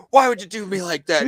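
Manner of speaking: embarrassed, playful, hurt-sounding bantering shout. Retelling a man in a store shouting back at a woman, retelling a man shouting. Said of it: "shouting at her".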